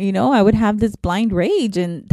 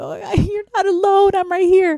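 very high, choked-up voice, near tears; 9 semitones higher than usual. Answering an anonymous reviewer who felt alone, on the verge of tears. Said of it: "I'm gonna cry right now".

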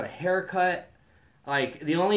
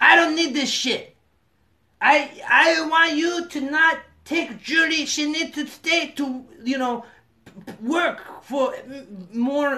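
very high, shrill, loud cartoon-villain voice; 11 semitones higher, 6 dB louder than usual. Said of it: "she sounds like a villain from an animation".

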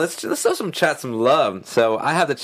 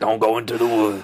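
put-on rough, gruff old-timer man voice; 4 semitones lower than usual. Quoting a line they love, in a gruff old man voice. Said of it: "Old man gruff voice".

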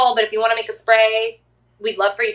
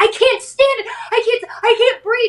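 mock, very high, panicky, frantic freaking out; 13 semitones higher than usual. Retelling her boyfriend running in from the bedroom: imitating someone freaking out. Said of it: "he starts like freaking out".

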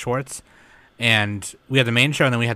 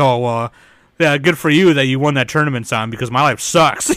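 mocking, sarcastic put-on impression voice; 4 semitones higher, 7 dB louder than usual. Retelling how he teased someone on a show, mocking imitation of the listener. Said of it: "just memeing you".

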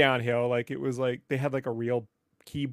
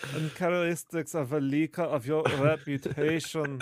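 put-on German voice; 2 semitones higher than usual. Repeating the earlier remark about a leaker: Werner Herzog voice. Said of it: "I only hear that in Werner Herzog's voice".

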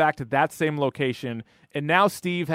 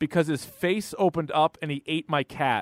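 ordinary talk

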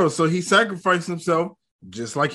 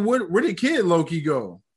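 plain

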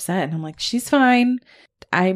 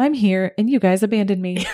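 mock casual, unbothered delivery. Retelling what someone said on being found: imitating a nonchalant tone. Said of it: "Boyston nonchalantly says".

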